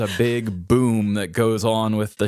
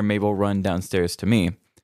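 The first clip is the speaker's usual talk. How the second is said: ordinary delivery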